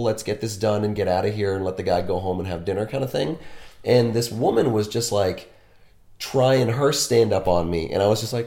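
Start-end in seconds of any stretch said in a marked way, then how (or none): none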